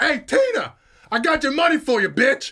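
very high, swooping shout. Retelling how a man shouted up to a window above, retelling the shout. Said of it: "shouts up to this window".

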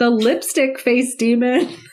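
giggling, laughing through the words. Sharing a last film fact about a demon's name: laughing while talking. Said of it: "I can't say it without laughing".

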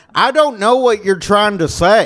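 put-on dopey, dim-witted Southern accent, pitched high. Retelling how a guy reacted to a joke he didn't get: dumb Southern accent. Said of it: "was he just stupid enough to where a Southern accent works".

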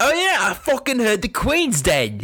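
put-on Australian accent, swooping intonation. Answering the question he just put to Jared, slipping into an Australian accent. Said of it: "I kind of went Australian there".

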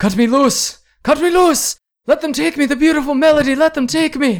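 very high-pitched, desperate screaming. Game master voicing a man as the players come closer, screaming desperately. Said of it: "you can hear him screaming".

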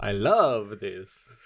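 put-on creepy, spooky vampire count voice. Trying out spooky voices for fun: Dracula voice. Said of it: "That's my Dracula".

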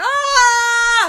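high, loud, startled scream.

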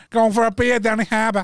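bad fake put-on Boston accent. Asked to do a Boston accent, the speaker has a go in a bad Boston accent. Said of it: "we'll have a Boston accent".

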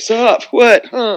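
very high, loud, half-listening, distracted voice. Retelling how the husband answered a greeting: imitating a husband. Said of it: "and husband's like".

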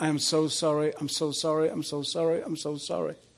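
put-on tearful voice, as if crying. Retelling one's own past words while saying sorry: retelling a tearful apology. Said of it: "I'm crying and I'm saying".

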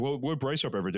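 ordinary talk, nothing marked

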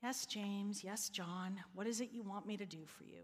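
acted worn-out weariness, low and soft. Voicing Jesus answering James and John's request, weary Jesus voice. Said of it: "you can almost hear the weariness in jesus' voice".

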